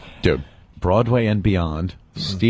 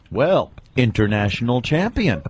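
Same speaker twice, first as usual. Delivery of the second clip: plain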